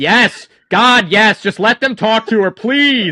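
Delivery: loud, high, shouted yell. Voicing George, who yells from the back: George yelling. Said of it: "George from the back just yell".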